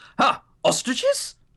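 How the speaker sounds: very high little cartoon mouse voice. Voicing a talking lime that sounds annoyingly chipper: Mickey Mouse voice. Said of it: "all I can think about is, like, Mickey Mouse".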